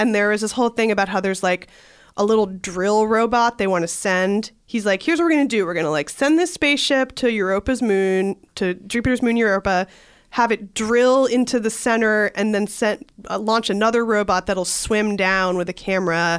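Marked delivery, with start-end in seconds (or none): none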